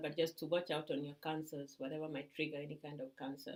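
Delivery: low, quiet voice.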